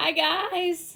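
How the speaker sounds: high voice breaking mid-word. Greeting viewers at the start of a live stream: voice cracking. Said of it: "My voice just cracked".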